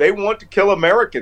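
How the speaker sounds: ordinary delivery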